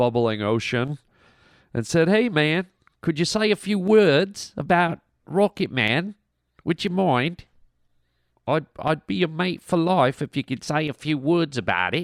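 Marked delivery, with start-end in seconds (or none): 2.1-12.1 fake Australian accent, pitched up. Quoting a request sent from across the ocean, put-on australian accent. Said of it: "everyone tries to do a Australian accent".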